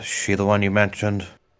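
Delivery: hushed half-whisper, kept low. Voicing a character who half-whispers a question to a companion: half-whispering. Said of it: "Loki whispers to Sabrina".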